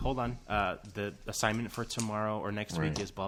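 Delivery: plain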